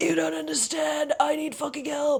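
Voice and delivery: very high-pitched screaming while crying. You act out what he does in his side videos, imitating Filthy Frank screaming and crying. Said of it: "screaming and crying and being like".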